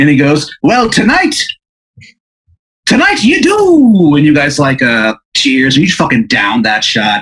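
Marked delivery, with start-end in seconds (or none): 0.6-4.1 horrendous fake Irish accent, very high pitched. Voicing a man dressed as a leprechaun greeting a player: horrendous fake Irish accent. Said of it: "his accent is horrendous".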